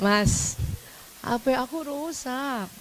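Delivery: coy, spoiled coaxing, very slow and drawn out. Showing wives how to talk to their husbands alone, coy and shrill. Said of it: "agak manja dan nyaring".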